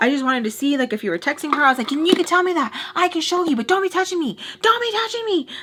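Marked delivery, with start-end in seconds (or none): 1.9-5.5 mock screaming, high and heated. Speaker retells confronting a man, retelling screaming at him. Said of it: "screaming at him".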